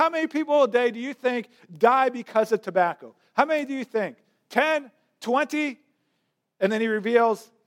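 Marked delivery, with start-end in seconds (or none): 0.0-5.8 put-on, mock voice of a man yelling upward. Retelling a commercial where a man with a megaphone yells at a corporation: imitating a man yelling. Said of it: "he's yelling up at them".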